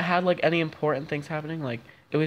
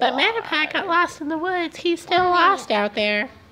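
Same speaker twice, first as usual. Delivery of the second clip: very high caterpillar critter voice; 14 semitones higher than usual. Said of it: "we figured out what Caterpie's voice is".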